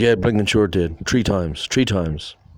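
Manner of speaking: put-on broad Dublin accent, laid on thick. Retelling what a man answered him, in a thick Dublin accent. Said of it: "he has a very thick Dublin accent".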